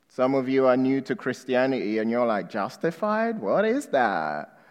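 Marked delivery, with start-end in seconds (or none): 2.5-4.5 put-on American accent with swooping pitch. Speaker voicing a confused newcomer to Christianity, in a put-on American accent. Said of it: "It's my best American accent".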